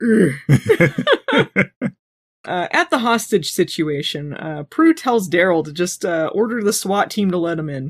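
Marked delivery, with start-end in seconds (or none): 0.0-1.5 grunting caveman voice. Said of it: "Caveman Leo".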